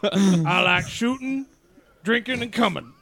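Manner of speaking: slow, put-on Texan drawl, each word stretched. Joking about how another speaker said a word: put-on Texan accent. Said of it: "like a Texan".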